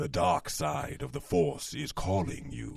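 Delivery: loud, rough, swooping boom, rasped big and dramatic. Answering a request for a Darth Vader voice: Darth Vader voice. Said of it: "you need a voice of Darth Vader".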